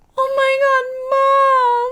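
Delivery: teary, very high, very slow and drawn-out. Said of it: "had tears in her eyes".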